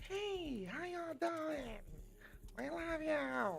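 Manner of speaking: put-on very high, soft, childlike little-kid voice. Thanking the audience, voicing an inner child bursting out, in a childlike inner-child voice. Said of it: "My inner child just was like".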